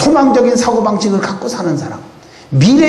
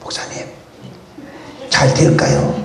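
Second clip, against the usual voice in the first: secretive, hushed whisper close to the ear; 7 semitones lower, 4 dB quieter than usual. Retell how someone held the pastor back after the opening service, once everyone had left, in a whisper. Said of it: "귓속말로 그러는 거예요".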